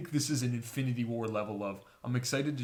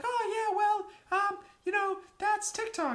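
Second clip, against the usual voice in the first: put-on very high-pitched, young-sounding voice. Acting out an imagined post-credit scene: Tom Holland impression. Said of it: "And young Tom Holland's like".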